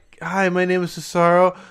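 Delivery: put-on voice of an eight-year-old child. Mocking how a wrestler's promo sounded: imitating Cesaro at show-and-tell. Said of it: "telling about his show and tell".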